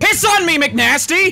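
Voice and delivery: very loud shouting. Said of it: "I've never heard you get that loud".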